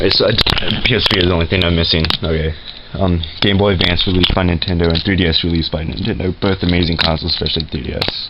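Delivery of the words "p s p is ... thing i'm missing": fast, rushed run-through. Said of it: "I had to talk fast".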